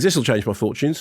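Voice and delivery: ordinary talk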